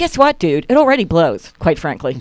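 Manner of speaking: ordinary talk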